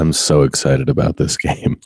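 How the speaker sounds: put-on flat monotone. Saying how excited they are about a game: Steven Wright monotone voice. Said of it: "The Stephen Wright voice".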